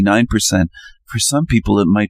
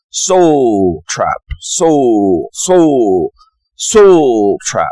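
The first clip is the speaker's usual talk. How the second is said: bad rough South African accent, drawn-out; 2 semitones higher, 4 dB louder than usual. Trying to say a term the way he says it, in a bad South African accent. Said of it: "I'll try to do the South African accent".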